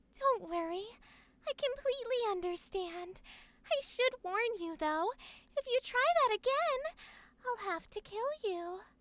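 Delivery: very high, menacing voice. Speaker demonstrating a favorite voice style, soft high-pitched threatening voice. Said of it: "I love doing the high pitched voice where the words they're saying are like threatening, but they're still very soft".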